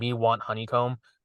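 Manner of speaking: ordinary delivery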